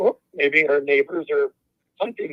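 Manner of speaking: ordinary talk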